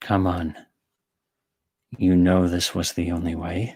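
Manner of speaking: put-on fixated, obsessive yandere-style character voice. Asked to say the line in the yandere voice. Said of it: "say this in the Yandere voice".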